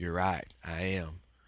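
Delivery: soft, laid-back Southern drawl, laid on thick. Acting out Tim's answer to Mindy, who wants him to stay, as a Tim Riggins impression, Southern accent. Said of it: "you just had to Southern it up".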